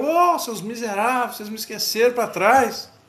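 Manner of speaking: put-on high shout calling from far off. Retelling a man left behind shouting after the truck: imitating someone shouting from afar. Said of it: "E ele gritando de longe".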